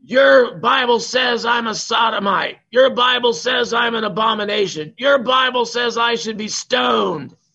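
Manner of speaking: screaming outburst, pitched very high. Speaker retelling a woman standing up in church, imitating her screaming. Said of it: "started screaming".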